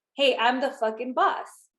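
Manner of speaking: plain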